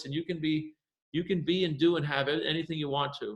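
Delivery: very calm, soothing, meditative voice. Retelling how Bob spoke to his infant kids: imitating Bob's calm meditative voice. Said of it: "speak to them in a very calm, meditative voice".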